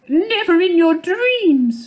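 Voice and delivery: very high, drawn-out exclamation. Narrating a story, the mother mouse answers little Maurice: exclaiming. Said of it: "the mother mouse exclaimed".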